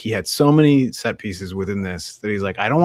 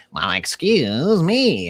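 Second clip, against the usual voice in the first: put-on droid voice, higher; 6 semitones higher than usual. Retelling what the droids say to each other: imitating the droids. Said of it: "the droids being like".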